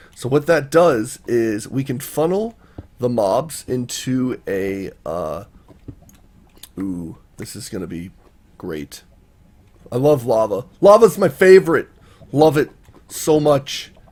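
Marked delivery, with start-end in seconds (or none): 6.7-13.8 fake, plainly sarcastic, dry gushing delight. Digging next to lava and praising it: sarcastic. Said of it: "that's me being sarcastic".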